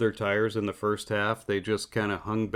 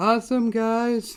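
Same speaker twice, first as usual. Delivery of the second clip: very high shout, pitched way up, slightly louder; 14 semitones higher, 5 dB louder than usual. Recalling someone who wins a lot, doing Palou's high-pitched voice. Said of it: "I get to hear his high pitched voice going".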